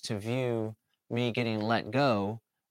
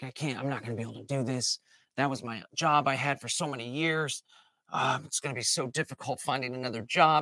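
put-on angry, self-pitying, pissed-off complaining. Acting out a fired worker's victim mindset: acting out angry victimhood. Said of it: "all pissed off and angry".

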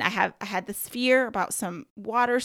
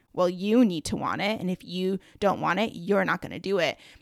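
put-on mock-condescending tone. Speaker retells a man's reply about wanting the diving training, imitating a condescending tone. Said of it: "it was very condescending the way he said it".

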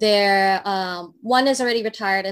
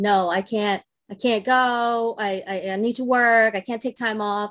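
mock stubborn insistence, slow and insistent. Retelling a mother refusing a vacation to keep working: imitating an insistent refusal.

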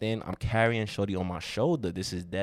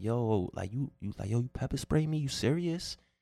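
put-on screaming, pitched higher; 5 semitones higher than usual. Retelling someone screaming about being pepper sprayed: imitating someone screaming. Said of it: "I hear Shorty screaming, like".

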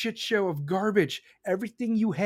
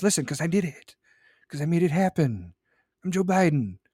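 put-on whisper; 2 semitones lower, 3 dB louder than usual. Showing the voice Joe Biden uses into the microphone: imitating Joe Biden whispering. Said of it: "he whispers like this".

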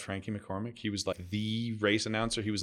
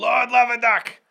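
put-on race announcer voice, higher and louder; 13 dB louder than usual. Repeating a race announcer's catchphrase: imitating Dick Ring announcing. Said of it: "he'd say".

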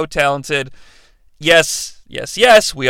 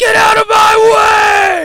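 loud shout, slow and high.

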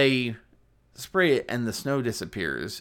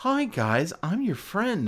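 slow, sweet, friendly, pitched-up voice; 8 semitones higher than usual. Describing the old cartoon snowman's manner: imitating nice friendly Frosty. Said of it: "being nice and stuff like that".

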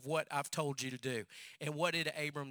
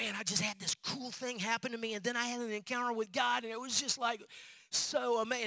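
excited, high-pitched, bubbling-over gushing; 8 semitones higher than usual. Telling a story, a speaker acts out the children's pastor's call, retelling excited speech. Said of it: "he was so excited".

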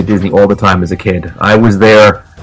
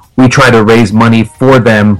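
usual speaking voice

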